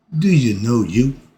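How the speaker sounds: plain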